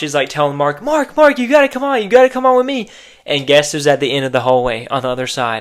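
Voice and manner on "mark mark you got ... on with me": very high, frantic, freaking-out urging tone. Retelling a scene where Gemma begs Mark to leave: imitating Gemma freaking out. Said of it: "Gemma is obviously, like, freaking out".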